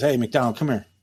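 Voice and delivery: mock forceful commanding voice. Retelling how the captain called a new officer over: imitating a forceful captain. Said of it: "he's very forceful".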